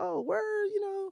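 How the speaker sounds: very high-pitched put-on voice. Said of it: "And I'm like".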